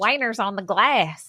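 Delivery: put-on Texas accent. Repeating a funny line in a Texas accent. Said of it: "the Texas Texas accent makes the word".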